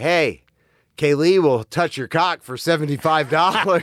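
put-on, brash, calling yell. Retelling how a tattoo artist friend would scream out to everybody: imitating Craig screaming. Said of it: "scream out to everybody".

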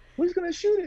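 put-on loud, very high-pitched childlike voice. Retelling a game moment, imitating a younger self's voice: high-pitched voice. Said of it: "in my high voice because I had a high voice".

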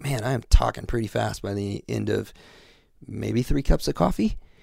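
normal talking voice

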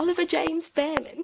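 fake British accent. Saying someone's full name the way it's joked about at school, in a mock british accent. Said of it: "I say it with the mock British accent".

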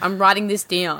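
mock menacing, threatening tone. Mimicking another speaker's line about writing the pick down: imitating a threatening tone. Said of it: "I like how you said that as, like, a threat".

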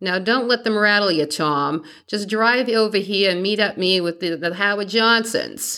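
attempted Boston accent. Retelling what Jack told Tommy over the payphone, Jack's Boston accent. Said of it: "in his best Boston accent".

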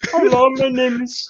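put-on very high, lost little German boy voice. Joking with a friend about a comeback, playing a little lost German boy. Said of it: "going full like little lost German boy".

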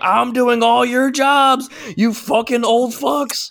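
mock very high, slowly dragged-out shriek. Asking whether the other person was screaming while cleaning the cafeteria: imitating someone screaming. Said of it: "literally screaming".

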